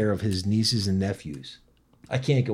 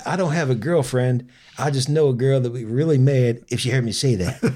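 one-liner delivery, voice a bit raised; 4 semitones higher, 6 dB louder than usual. Retelling a joke of Mitch Hedberg in his manner: Mitch Hedberg impression. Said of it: "That's how he talked".

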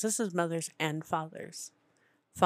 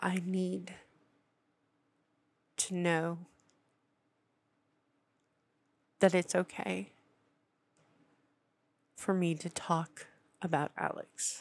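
emotional voice close to tears. Speaking about the loss of a child named Alex, tearful and emotional. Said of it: "the tears that have been shed or the emotion that I'm having".

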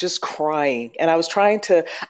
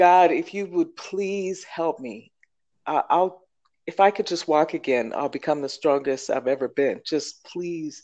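mock-crying, tearful, pleading voice; 4 dB quieter than usual. Recounting losing a job and praying while in pain, retelling crying out to God. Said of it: "I cried out. I'm crying".

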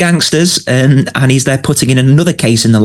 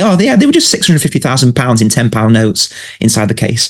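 usual speaking voice

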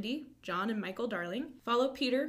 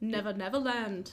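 clumsy, terrible put-on Australian accent. Explaining an australian term for the outback: terrible aussie accent. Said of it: "It's my terrible Aussie accent".

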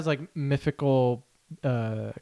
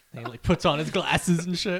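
plain

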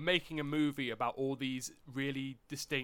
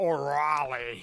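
bad, loud, fake put-on Australian accent; 7 dB louder than usual. Imitating an actor who sounds fake saying a name: imitating a fake-sounding Australian accent. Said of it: "He does the Australian accent".

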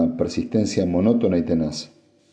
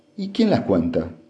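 usual speaking voice

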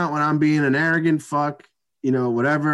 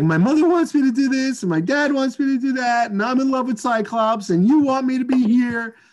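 mock screaming, very high and pitched up; 9 semitones higher than usual. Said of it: "start screaming at each other".

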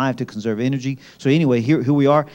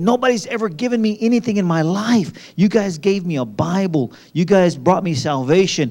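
acted out, overjoyed, excited, gushing, raised pitch; 6 semitones higher than usual. Retelling a visitor's thanks for the Bibles they gave: imitating an excited man. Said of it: "he's so excited 'cause he said".

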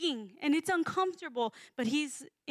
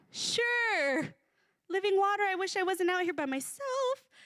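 mocking, sarcastic, drawn-out "sure"; 4 semitones higher than usual. Imagining a woman's reply to Jesus about living water: sarcastic, mocking. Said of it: "Or she being sarcastic, like".

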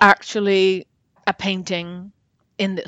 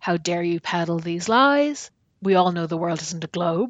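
put-on indignant, angry little old lady voice; 2 semitones lower, 5 dB quieter than usual. Retelling a story of an old lady confronting a scientist: imitating an angry old lady. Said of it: "a little old lady stood up really angrily".

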